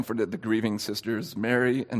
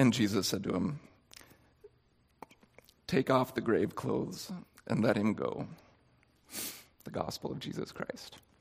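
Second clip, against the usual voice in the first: soft, choked-up voice catching through tears; 6 dB quieter than usual. Reading a gospel passage aloud to listeners, voice choking up. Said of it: "I'm choking up".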